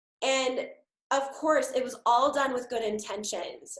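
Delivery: ordinary talk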